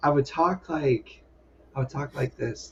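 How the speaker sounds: soft-spoken, quiet, barely projecting voice. Recalling a school acting class, showing how they used to talk: soft-spoken. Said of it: "I was just so soft spoken".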